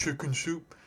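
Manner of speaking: garbled high mumble, as through misshapen mouth. Retelling a movie scene, imitating a character's mumble. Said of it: "she mumbles through her fart mouth to talk".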